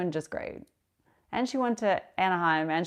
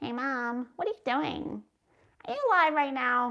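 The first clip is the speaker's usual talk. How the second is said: put-on high-pitched babbling baby-talk cadence in words; 6 semitones higher than usual. Showing how babble turned into words, talking to mom: baby-babble tone with words. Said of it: "same kind of tone of tone and babble".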